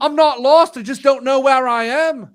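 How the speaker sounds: put-on loud Liverpool accent, pitched way up. Retelling a man's answer when a woman asks if he is lost, in a liverpool accent. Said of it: "like his Liverpool accent".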